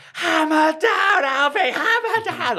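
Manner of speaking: very high, drawn-out scream with the voice breaking. Retelling cheering a young runner near the finish line: retelling a screamed cheer. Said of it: "I'm screaming".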